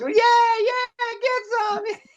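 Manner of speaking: very high, stretched-out holler of yeah. Retelling a drifting ride through traffic: imitating own past yelling. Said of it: "I'm yelling out".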